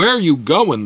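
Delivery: insistent, demanding tone. The largest humanoid, blocking the path, questions the travellers, demanding. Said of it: "the creature demanded".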